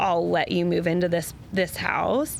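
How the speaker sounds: usual speaking voice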